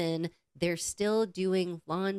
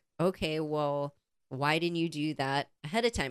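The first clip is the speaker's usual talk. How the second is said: curt, snippy put-on tone; 3 semitones lower than usual. Retelling a reply to guests who were running late: imitating own snippy reply. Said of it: "so I'm getting a little snippy back".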